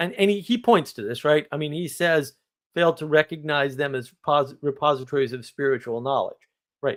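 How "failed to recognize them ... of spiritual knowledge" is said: ordinary talk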